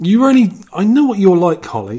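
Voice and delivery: accusatory tone. On the podcast, the speaker addresses holly in an accusatory tone. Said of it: "with my accusatory tone".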